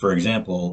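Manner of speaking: ordinary delivery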